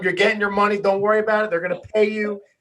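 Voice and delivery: loud, hollered shout. Recalling yelling at him at the Eagles game, retelling a yell. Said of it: "I'm yelling at him".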